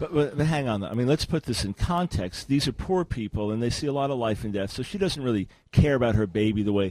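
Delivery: sarcastic. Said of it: "I know you're being sarcastic".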